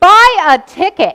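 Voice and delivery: huge thundering booming voice, very loud. Speaker retells God answering their prayer, in God's big booming voice. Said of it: "in this big booming voice".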